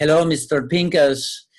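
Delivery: disguised voice, clumsy, bad put-on Puerto Rican accent. Retell calling Mr. Pincus at home with your voice disguised, in a bad Puerto Rican accent. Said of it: "I used like a bad Puerto Rican accent".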